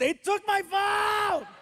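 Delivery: put-on shrill yell, pitched very high. Retelling how he yelled at the ground about his phone, retelling a yell. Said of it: "he yells at the ground and he goes".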